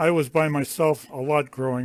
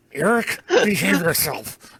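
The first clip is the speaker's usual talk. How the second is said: put-on gritted-teeth angry voice, higher and louder; 4 semitones higher, 5 dB louder than usual. Imitating a mother scolding through gritted teeth, talking through gritted teeth. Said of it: "she'd grit her teeth and talk to me like this".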